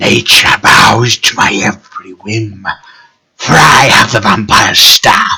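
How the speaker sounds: very loud, booming humanoid creature voice. A game master voices a humanoid creature speaking to the player. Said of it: "this humanoid creature looks at you and says".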